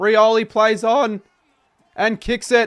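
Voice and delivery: very high, loud voice cracking. Commentating a coast-to-coast goal as it is kicked, voice cracking. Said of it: "Bit of a voice crack there".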